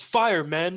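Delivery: high, barked battlefield shout. Mid-battle, a game master voices Balros giving an order to his men: Balros shouting an order. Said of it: "and he shouts".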